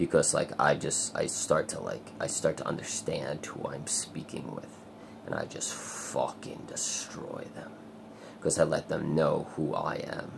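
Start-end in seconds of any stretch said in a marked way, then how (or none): 5.3-7.7 low, whispered, evil villain voice. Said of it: "I go into that guy".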